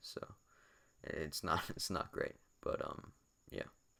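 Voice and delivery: soft, whispery lost voice.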